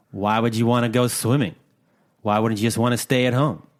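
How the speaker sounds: put-on dismissive tone. Retelling a partner's reply about going swimming: imitating a dismissive tone. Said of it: "in a very dismissive".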